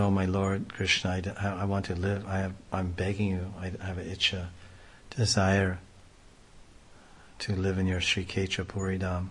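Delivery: ordinary delivery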